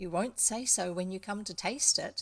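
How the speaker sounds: ordinary delivery, nothing marked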